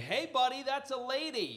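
very high, swooping, threatening shout. Retelling yelling a warning at a man in a station: retelling own yell. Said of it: "So I yell out the most threatening thing".

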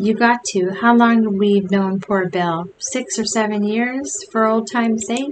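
usual speaking voice

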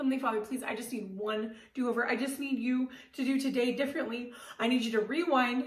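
imploring, begging, pleading voice. Speaker re-enacts kneeling in a closet to pray that night: re-enacting own pleading prayer. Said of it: "I pleaded".

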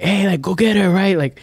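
shrill, very high-pitched screaming yell. Retelling a grandma's story of people heard at night: imitating people screaming. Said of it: "screaming shit, like".

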